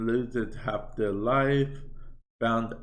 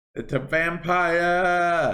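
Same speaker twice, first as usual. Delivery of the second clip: loud, high yell with vampire stretched out; 7 semitones higher, 6 dB louder than usual. Talking to viewers over the mic, yelling. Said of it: "sorry for yelling in the mic".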